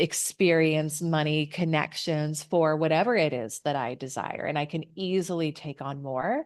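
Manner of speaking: plain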